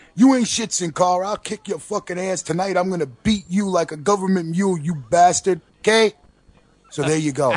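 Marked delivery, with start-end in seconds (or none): 0.2-5.6 taunting wrestler-style trash-talk voice with raised pitch. Dubbing fake audio for a wrestler's trash talk: voicing Titus O'Neil's trash talk. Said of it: "let me bring you the audio for that".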